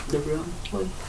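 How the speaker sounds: very soft, too quiet delivery.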